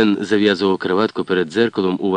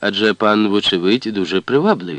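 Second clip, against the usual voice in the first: ordinary delivery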